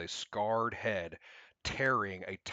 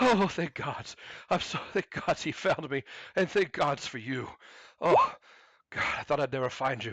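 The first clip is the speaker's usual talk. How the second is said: panicked, hysterical, high-pitched screaming in terror; 6 semitones higher, 6 dB louder than usual. Voicing Edrin on being found by the others, Edrin screaming hysterically with fear. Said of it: "Edrin is hysterical with fear and screams".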